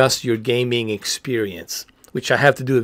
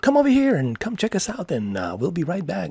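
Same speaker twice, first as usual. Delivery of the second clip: high, swooping radio ad announcer voice-over; 6 semitones higher, 4 dB quieter than usual. Retelling a voice-over job he did for a sponsorship: imitating his old voice-over ad read. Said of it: "I did some vo-, you know, voice".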